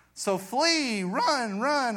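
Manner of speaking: voice breaks upward, drawn out, on run. Speaking to listeners about a Bible passage, your voice cracking. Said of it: "my voice cracked".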